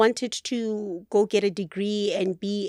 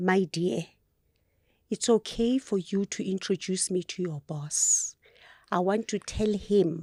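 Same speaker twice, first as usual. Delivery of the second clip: put-on whispering voice; 4 dB quieter than usual. Retelling what father said aside at the restaurant opening: imitating father whispering. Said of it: "he's whispering".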